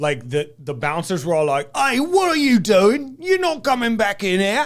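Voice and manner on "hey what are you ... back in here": high, loud, slow, barked Cockney bouncer voice. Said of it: "Cockney British".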